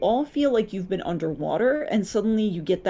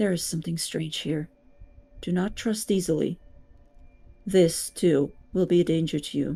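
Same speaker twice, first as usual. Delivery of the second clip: close, voiceless half-whisper; 2 semitones lower than usual. Narrating a game, the storyteller voices the Raven Queen close to the listener: half-whisper. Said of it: "she just whispers to you".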